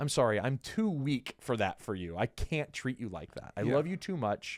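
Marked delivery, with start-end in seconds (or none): none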